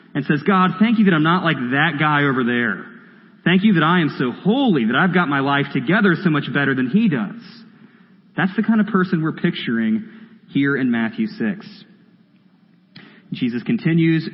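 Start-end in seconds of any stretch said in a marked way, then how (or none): none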